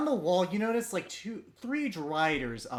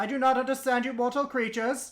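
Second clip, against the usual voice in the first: loud shouting voice, higher; 7 semitones higher than usual. Playing a character who speaks to the travelers: yelling. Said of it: "Why are you yelling?".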